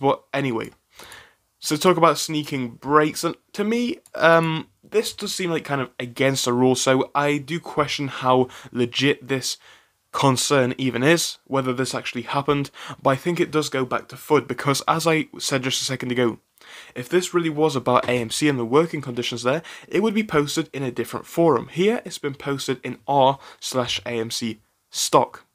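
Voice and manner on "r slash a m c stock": stock stressed in a slow delivery. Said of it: "Emphasis on the stock".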